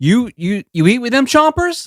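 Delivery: mock very high, aggressive shout, rising in pitch. Acting out a first-date line to a smiling date: yelling. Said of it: "Why are you yelling at us?".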